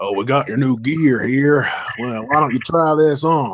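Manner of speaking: thick, broad, heavy Texan accent. Imagining the body armor guy handing over new gear: heavy Texan accent. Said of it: "heavy accent Texan".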